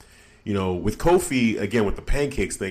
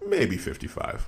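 mock muttering under the breath; 5 dB quieter than usual. Retelling a man's aside as the announcer reads his weight, retelling an under-breath mutter. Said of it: "under his breath goes".

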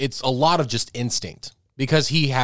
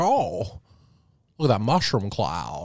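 put-on, cheerful voice of an old film star; 3 semitones lower, 3 dB quieter than usual. Retelling a comedian's bit: Jimmy Stewart impression, super positive. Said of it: "Jimmy Stewart says sounds super positive".

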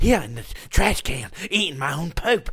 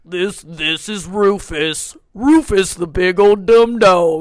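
put-on dog voice, louder; 10 dB louder than usual. Asked to do a bigger dog, the speaker introduces Rufus in a big dog voice. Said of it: "do a bigger dog".

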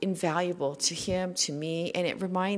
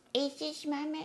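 little put-on pet voice; 10 semitones higher, 7 dB quieter than usual. A pet owner shows the little voice used for Fortune, the dog. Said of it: "I do this little voice for Fortune".

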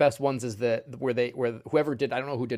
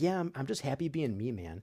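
put-on super calm voice, quieter; 7 dB quieter than usual. Imitating Jim Carrey in his interviews: super calm Jim Carrey impression. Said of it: "this super calm".

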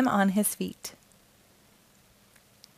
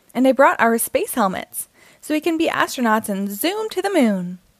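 ordinary delivery, nothing marked

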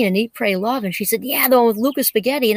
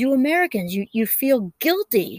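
put-on wonderful, slow, deliberate, unhurried Italian accent. Retelling what Lucas Spaghetti said to them, doing Lucas Spaghetti's Italian accent. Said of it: "with his wonderful Italian accent".

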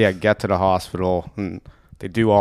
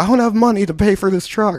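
acted-out, very high-pitched protesting yell; 13 semitones higher than usual. Speaker retelling being told to get in the truck after a fall, retelling own yelling. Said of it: "And I'm like yelling at them".

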